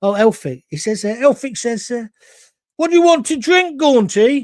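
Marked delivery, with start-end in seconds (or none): 2.8-4.4 put-on high, loud Brummie accent. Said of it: "that's become a Brummie".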